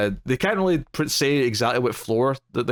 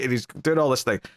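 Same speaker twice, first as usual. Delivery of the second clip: normal talking voice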